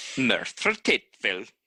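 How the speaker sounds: speaking with a Welsh accent. Practising a Welsh town's name, one speaker repeats it in a Welsh accent. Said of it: "Now with a Welsh accent".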